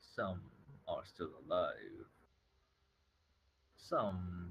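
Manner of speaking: great dragon voice, somewhat drawn-out. A dragon answers a player's question; dragon voice. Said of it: "well, as you see the dragon's face and its snout".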